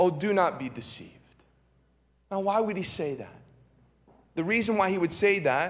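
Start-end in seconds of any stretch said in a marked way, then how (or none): none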